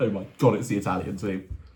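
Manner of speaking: upper-class voice. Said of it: "that sounded really posh".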